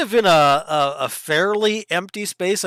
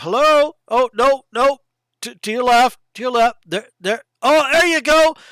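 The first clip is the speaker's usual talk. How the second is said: loud, high-pitched calling out; 7 semitones higher, 5 dB louder than usual. Voicing a stranger guiding players through the trees: louder voice calling out. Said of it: "the voice is a lot louder".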